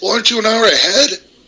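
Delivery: put-on very high drunken voice. Retelling a call from a buddy: imitating a drunk friend. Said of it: "He's all drunk, and he goes".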